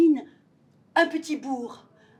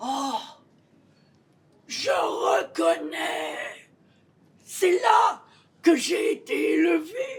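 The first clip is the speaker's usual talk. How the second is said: put-on stuffy, congested head-cold voice; 3 semitones higher than usual. One actress playing every role voices the man the spirit has carried off; character with a head cold. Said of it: "Quand [name] s'éveilla, / il avait un bon rhume. / Une comédienne joue 14 personnages pour nous entraîner dans la folie fantastique et poétique de ce beau conte de Noel de Charles Dickens".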